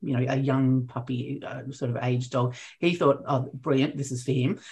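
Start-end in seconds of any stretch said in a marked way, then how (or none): none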